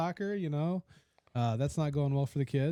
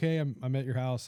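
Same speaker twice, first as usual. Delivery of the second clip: usual speaking voice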